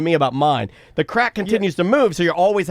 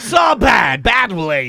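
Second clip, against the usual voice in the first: imitated Eastern European accent; 4 dB louder than usual. Imitating the Eastern Bloc dentist, put-on Eastern Bloc accent. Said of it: "And he talks like that".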